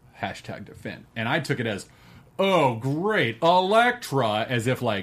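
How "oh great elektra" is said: put-on sarcastic reading. Acting out how they read an online comment: imitating a sarcastic reading.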